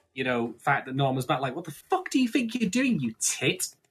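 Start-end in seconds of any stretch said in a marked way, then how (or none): 1.6-3.7 acted, very high, shrill, outraged and indignant outburst. Retelling a character's reaction to Norman's return: imitating indignant anger. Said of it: "very indignant about this whole".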